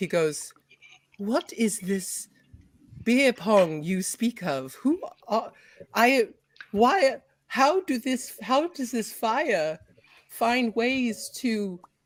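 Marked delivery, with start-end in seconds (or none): 1.2-11.8 baffled, stumbling, confused elf voice. Voicing an elf who has not yet talked: confused elf voice. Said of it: "looks so confused".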